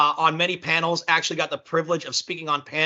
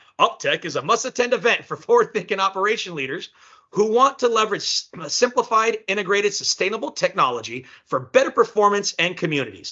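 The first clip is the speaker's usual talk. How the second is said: radio announcer voice, on-air promo style; 4 semitones higher than usual. A speaker reads an event description aloud: radio announcer voice. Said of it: "Maybe I should read it in more radio voice".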